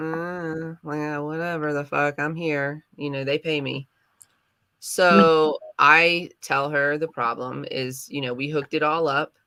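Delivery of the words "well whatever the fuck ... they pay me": put-on reluctant, unwilling tone. Retelling how a phone support agent answered: imitating someone sounding unwilling. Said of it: "that kinda like".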